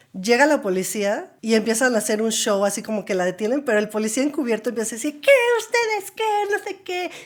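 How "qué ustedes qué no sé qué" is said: mock very high, showy cop-style shouting. Recounting an undercover cop who started yelling during an arrest, imitating a cop yelling. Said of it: "Y empieza a gritar y a hacer su show".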